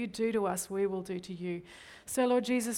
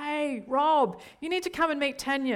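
play-acted calling out at top volume, full voice; 6 semitones higher, 5 dB louder than usual. Recounting how the woman next to them called over to Rob, retelling a yell. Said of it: "yells at the top of her voice".

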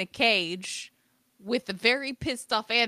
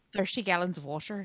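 put-on Irish accent, lower and quieter; 4 semitones lower, 8 dB quieter than usual. Coaching the other speaker on pronouncing the word water, in an Irish accent. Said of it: "saying it in an Irish accent".

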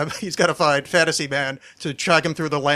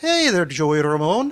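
put-on Scottish accent. Retelling a cartoon's voice-over talking to its character: imitating a Scottish-accented voice. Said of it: "where a Scottish, uh, voice guy goes".

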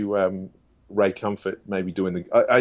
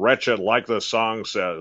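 cartoon character voice in radio style. Showing how a radio host talks: Todd Friel voice. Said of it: "that kind of voice".

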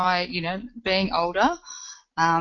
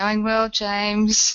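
worn-out voice, nearly used up; 3 semitones higher, 4 dB louder than usual. Just unmuted on a call, greeting the host, with a voice nearly gone. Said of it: "my voice is nearly gone there".

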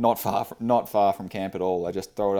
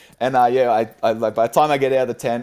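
usual speaking voice

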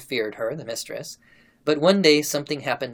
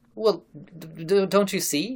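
stammering, slower and higher; 4 semitones higher than usual. A man answers Varvara Ivanova, stammering. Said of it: "He stammered".

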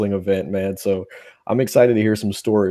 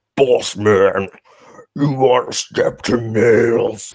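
deep, creepy wrestler voice. Imitating a wrestler's promo with a voice-altering effect: deep creepy Nails voice. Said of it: "really deep".

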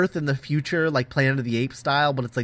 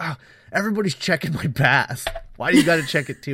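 play-acted, really annoyed, irritated, fed-up griping tone. Retelling a scene from a story, imitating an annoyed character. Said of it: "he gets really annoyed".

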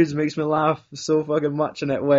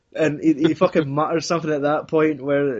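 usual speaking voice

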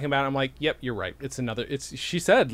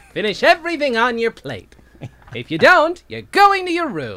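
very high, very loud, shrill, booming weird-dad scolding; 9 semitones higher, 9 dB louder than usual. Speaker imagines how a woman's very weird father talked, imitating a milquetoast father. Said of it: "Who must have talked like this!".

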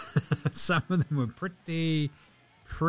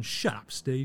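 put-on dismissive voice, sometimes quieter; 5 dB quieter than usual. Retelling a player answering the coach back: imitating Marcus Smart. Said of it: "Marcus Smart going".

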